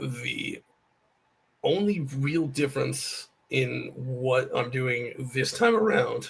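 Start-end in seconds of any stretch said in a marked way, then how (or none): 0.0-0.6 voice breaking partway through the phrase. Answering a loaded question about this attempt, with a voice crack. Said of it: "there was a fantastic voice crack there".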